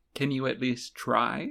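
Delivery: very gentle, soft, coaxing tone. Retelling what a character says to get through to her: imitating someone speaking very gently. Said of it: "he very gently says".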